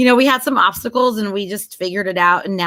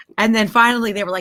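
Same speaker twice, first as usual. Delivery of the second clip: ordinary delivery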